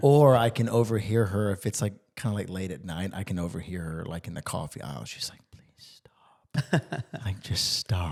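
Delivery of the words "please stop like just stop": breathy, quiet mutter under the breath. The speaker imitates a woman overheard late at night, imitating muttering under breath. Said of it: "under her breath".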